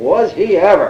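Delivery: high, sarcastic tone with rising tune. Retelling her reply after hearing brother was very different: mock-sarcastic rising tone. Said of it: "in a kind of rising, sarcastic tone, with a great big smile".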